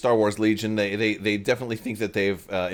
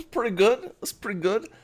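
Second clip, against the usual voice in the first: silly put-on goofy voice, very high pitched; 13 semitones higher than usual. Host announcing a giveaway to channel viewers, goofy voice. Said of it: "I'm doing goofy voices lately".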